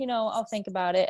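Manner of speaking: normal talking voice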